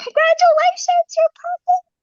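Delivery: put-on very high, thrilled, excited shriek. Speaker retells a nurse calling from the clinic; retelling a nurse's scream. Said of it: "just starts screaming".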